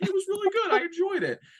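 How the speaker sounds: voice shot way up, very high-pitched. Retelling own past words after a film: imitating own high-pitched voice. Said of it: "My, my voice got really high".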